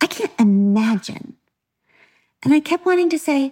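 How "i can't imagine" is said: mock scornful, disdainful, dismissive, distancing tone. Imitating people who keep repeating a sentence: imitating a disdainful tone. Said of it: "It was this sentence with this certain tone".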